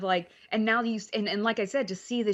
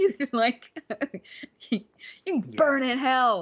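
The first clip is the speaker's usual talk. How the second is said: mock angry yelling, higher; 4 semitones higher than usual. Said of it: "I'm screaming at the T V about".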